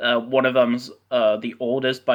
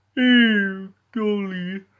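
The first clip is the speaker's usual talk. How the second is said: high-pitched voice with ew drawn out; 9 semitones higher than usual. Doing a cartoon character impression: Seven impression. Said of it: "I do the best Seven impression ever".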